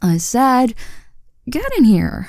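put-on swooping, stern, commanding older-sister voice. Insisting her visiting younger sibling stay and talk, using her big sis voice. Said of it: "you're forcing me to use my big sis voice".

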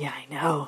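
loud, eager, excited whisper.

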